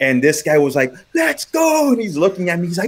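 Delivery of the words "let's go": put-on yell, higher pitch. Retelling a batter taunting the pitcher after a double: imitating someone yelling. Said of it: "it was loud".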